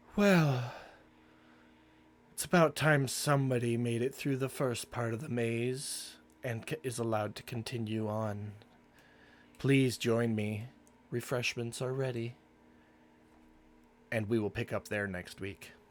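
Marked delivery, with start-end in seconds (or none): 0.2-12.4 gentle, very soft-spoken, maze drawn out. Narrator voicing a woman who greets the party in a courtyard, in a very soft voice. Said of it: "in a very soft voice".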